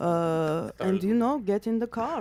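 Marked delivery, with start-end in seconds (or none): 1.4-2.2 Armenian-accented speech. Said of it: "your Armenian accent".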